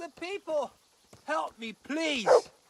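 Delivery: crying out, calling out. Calling out to people for help after surviving an attack, shouting for help. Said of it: "Why are you shouting here?".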